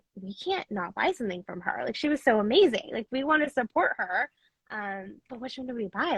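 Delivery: ordinary talk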